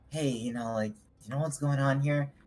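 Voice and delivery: hushed voice. Acting out a hushed question to another character: whispering. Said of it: "why are you whispering?".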